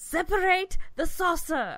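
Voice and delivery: booming, very high Shakespearean-sounding declaration. Repeating a line to a listener who asked 'what?', in a mock-shakespearean voice. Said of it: "I wanted to say it all like Shakespearean sounding".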